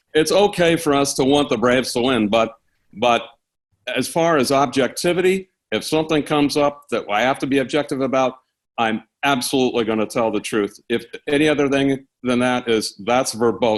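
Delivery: normal talking voice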